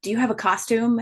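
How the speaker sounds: urgent, alarmed, high, panicked delivery. Retelling a phone call from someone in a panic: imitating a panicked caller. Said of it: "she called me in a panic".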